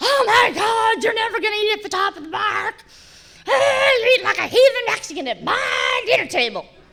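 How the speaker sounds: very high, mock panicked, frantic outburst. Retelling her reaction at the dinner table: imitating someone freaking out. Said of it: "she just freaked out".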